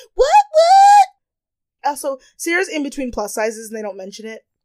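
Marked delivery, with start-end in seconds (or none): 0.2-1.1 very high, loud, shocked yell. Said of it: "They're like".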